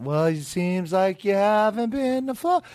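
swooping sing-song voice. Retelling what the dentist says at checkups: imitating a sing-song voice. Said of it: "stop talking to me in a sing-song voice".

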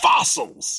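put-on shouting. Imagining a critic yelling at the movie screen: imitating someone shouting. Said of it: "starts shouting at the screen".

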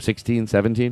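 ordinary delivery

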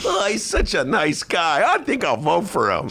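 put-on high, swooping, sarcastic valley girl accent. Mocking Chicago voters who like a candidate in a sweater, in a sarcastic valley girl accent. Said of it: "giving a valley girl accent to mimic what sarcasm".

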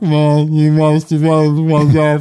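flat, level robotic monotone. Showing what voice the computer holding his brain should have: Cylon robot voice. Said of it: "like a Cylon voice".

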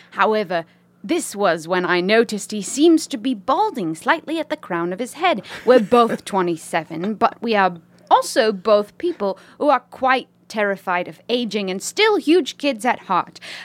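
mock British lady accent. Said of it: "To read this in a British accent?".

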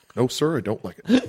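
off-target, horse-like, cartoonish put-on voice. Answering a mock interview question in character as the President: Obama impression sounding like Ren and Stimpy horse. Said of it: "You're just doing the horse from Ren and Stimpy".

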